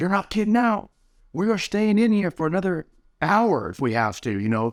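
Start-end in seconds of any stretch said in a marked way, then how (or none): 0.0-2.9 play-acted, very high, rallying pump-up shout. Retelling pumping oneself up in an ice bath: imitating own shouting. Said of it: "So I'm shouting".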